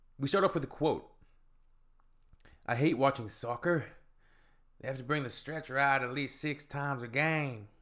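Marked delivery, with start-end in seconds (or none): 2.7-7.6 put-on southern American accent. Reading the opening quote of a video: put-on southern accent. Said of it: "It's my southern accent".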